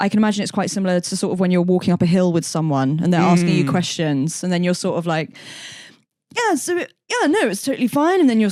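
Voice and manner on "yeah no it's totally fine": very high, very slow, drawn-out put-on posh accent. Acting out brushing off questions while walking up a hill; posher accent. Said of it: "was that accent that you just put on?".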